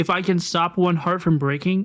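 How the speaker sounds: usual speaking voice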